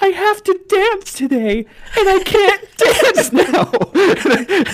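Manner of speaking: mock traumatized wailing, very high, slow, loud. Retelling what the traumatized girl said after being pulled out, screaming. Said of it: "she's still screaming like even after we pulled her out".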